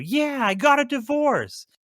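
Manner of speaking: very high, swooping, acted-out showy excitement. Acting out a toy commercial's players announcing bad news: imitating excited players. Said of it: "they get all excited and show".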